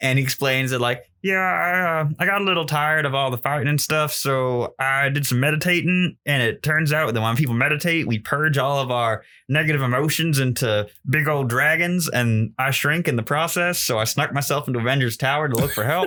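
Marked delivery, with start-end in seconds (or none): 1.2-16.1 goofy, casual little dragon voice. Retelling a comic scene where a shrunken dragon explains himself: goofy Fin Fang Foom voice. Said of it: "my goofy Fin Fang Foom voice".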